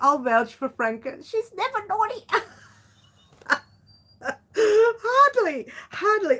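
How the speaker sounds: pitched way up, swallowing a laugh. Host speaking to franca and the group, holding back a laugh. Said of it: "I'm trying not to laugh".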